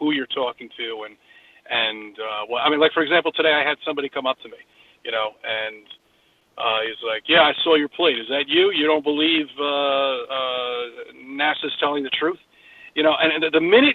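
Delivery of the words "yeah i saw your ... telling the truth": snide, mocking, sarcastic tone with drawn-out uh. Retelling what somebody who came up said today: imitating a sarcastic voice. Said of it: "in that sarcastic voice".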